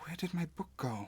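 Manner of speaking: said quietly, bewildered. Narrating the scene, the narrator voices a befuddled man: quiet, confused murmur. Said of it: "you hear him quietly say".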